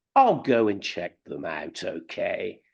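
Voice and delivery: slow, patronizing, condescending tone. Retelling how they answered a girlfriend's offer: retelling a patronizing remark. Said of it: "very patronizingly".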